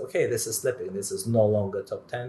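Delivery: normal talking voice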